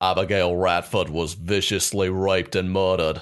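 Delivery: best-attempt put-on Australian accent. Asked to do her best australian, she speaks in a put-on australian accent. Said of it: "if anyone's like, do your best Australian, I have to kind of go to what I know".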